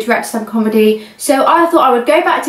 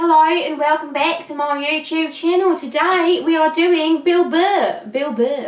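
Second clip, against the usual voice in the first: badly done, clumsy put-on Australian accent; 6 dB quieter than usual. Trying the only accent they can do on their YouTube channel, bad Australian accent. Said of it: "why am I doing it so badly?".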